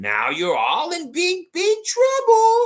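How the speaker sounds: put-on voice, very high, loud goofy comedy shout. Reading out what Shane Waters is saying: Adam Sandler impression. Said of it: "I'm trying to do Adam Sandler".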